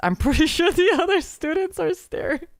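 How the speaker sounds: high, laughing through the words. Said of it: "and then Kokone goes".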